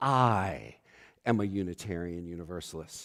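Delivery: weight put on the word "I".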